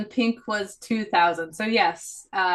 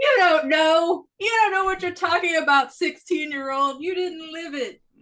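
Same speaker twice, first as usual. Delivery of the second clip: put-on, very high, shrill scolding yell; 9 semitones higher, 4 dB louder than usual. Playing an old person scolding a sixteen-year-old, yelling. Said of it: "I'm sorry for yelling".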